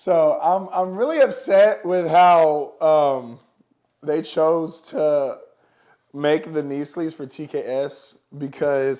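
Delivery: loud, very slow, laugh-broken speech. Reviewing knee sleeves after a funny interruption, laughing while talking. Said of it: "I'm sorry, I'm laughing".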